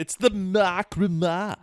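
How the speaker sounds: put-on goofy show-host voice, high and slow. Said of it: "is that the best Little Karibo voice you could do?".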